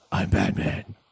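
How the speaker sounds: put-on gruff superhero voice.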